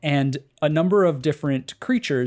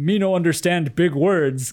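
dim-witted brute voice, broken and simple-sounding; 3 semitones higher than usual. Retelling how a giant monster in a game talks: imitating an unintelligent giant monster. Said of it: "this very unintelligent".

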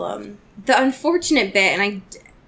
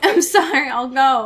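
mock crying, higher; 4 semitones higher than usual. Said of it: "crying in a corner".

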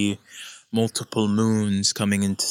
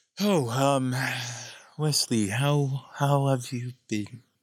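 mock-sighing, higher put-on voice; 4 semitones higher than usual. Retelling how Llama answers once finally reached, imitating Llama's sigh. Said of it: "you hear kind of a sigh and goes".

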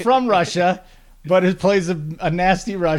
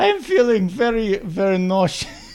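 imitated Russian accent, much higher; 3 semitones higher than usual. Quoting a woman who said she felt nauseous, in her russian accent. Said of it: "she had a Russian accent too".

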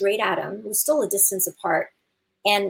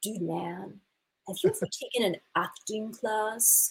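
slow, hushed, laid-back surfer dude drawl; 6 dB quieter than usual. Imitating a guy from the past who talked like a surfer: surfer dude voice. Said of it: "he talked like a surfer".

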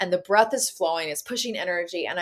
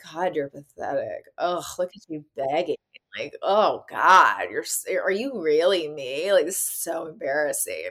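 put-on withering, scornful teenage voice, drawn out; 3 semitones lower than usual. Voicing one's younger self looking on the begging: imitating a scornful thirteen-year-old. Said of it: "looking at me like a thirteen-year-old would".

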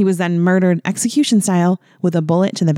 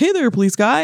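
friendly, folksy, pitched-up police officer voice; 6 semitones higher than usual. Imagining how other police officers would greet him, doing an impression of a cop. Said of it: "Your impression of cops just cracks me up".

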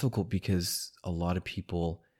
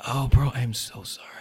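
put-on whisper, higher; 5 semitones higher, 4 dB louder than usual. Retelling a late-night apology to a host while others slept: retelling a whispered apology. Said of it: "all whispered".

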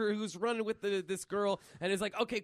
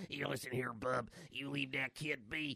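very low, quiet, hard hushed voice; 8 semitones lower, 8 dB quieter than usual. Pitching a scene where Logan warns over the walkie-talkie: Logan impression. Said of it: "is that a little too much for Logan?".

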